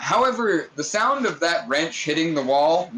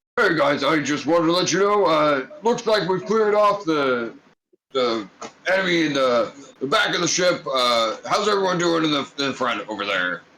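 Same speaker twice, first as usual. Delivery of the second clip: put-on gorilla character voice. Voicing a character's message heard over the intercom: Mark the Gorilla voice. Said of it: "the voice of Mark the Gorilla".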